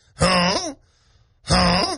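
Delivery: goose-like put-on French-accented voice. Playing a waiter offering wine with french fries, sounding like a french goose. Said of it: "I sound like a goose now".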